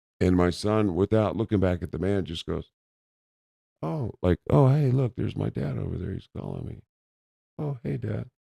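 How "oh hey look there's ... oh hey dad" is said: dazed, spaced-out, drifting, pitched-up voice. Retelling how the son spoke after the encounter, imitating a dazed son. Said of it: "and he's out of it".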